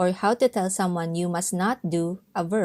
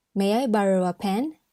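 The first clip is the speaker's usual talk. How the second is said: ordinary delivery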